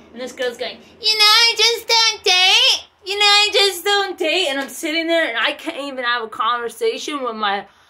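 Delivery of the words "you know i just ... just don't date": very high, loud, blaring loudmouth chatter. Retelling what a girl kept saying at brunch: imitating a loud-mouthed girl. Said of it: "her loud fucking mouth".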